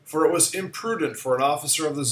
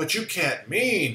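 gasping, slower words; 3 semitones higher, 3 dB quieter than usual. Narrator reads a man's reply to the general, gasping. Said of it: "gasped Rainsford".

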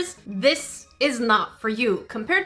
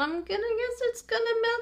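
skeptical, doubtful voice at a very high pitch; 11 semitones higher, 6 dB quieter than usual. Following instructions that show no pictures: skeptical, high-pitched. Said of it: "I say skeptically with a high-pitched voice".

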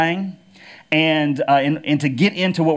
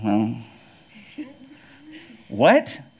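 put-on mumbled delivery, pitched lower; 4 semitones lower, 3 dB quieter than usual. Retelling a joke where a man mumbles his confession: imitating a mumble. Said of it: "he kinda mumbles".

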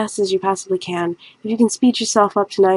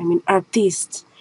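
silly fake French accent, slower; 4 dB quieter than usual. Speaker saying they are no salesperson, in a silly fake french accent. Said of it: "don't have silly accents like that".

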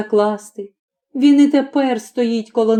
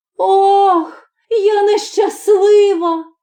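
unnatural, very high strange cry, long drawn-out "Ох"; 9 semitones higher than usual. Reading a girl's cry when she sees the young master's hooves: crying out in a strange voice. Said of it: "крикнула не своїм голосом".

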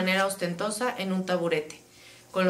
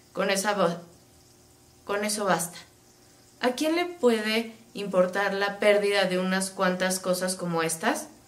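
ordinary delivery

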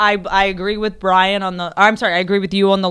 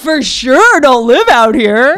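very loud, drawn-out man's voice; 5 semitones higher, 8 dB louder than usual. Showing again how the guest talks: imitating Brendan's way of talking. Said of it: "No, it's this".

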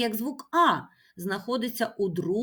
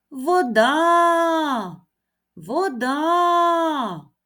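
high, loud call stretching the final а of вода; 6 semitones higher, 7 dB louder than usual. A teacher shows children where a word's stress falls, calling out. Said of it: "Покличемо".

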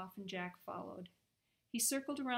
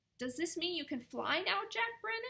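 high-pitched, fussy, fretful voice; 9 semitones higher, 4 dB louder than usual. Narrator reads a character asking Jack Brennan a question, fussing. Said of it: "he fussed".

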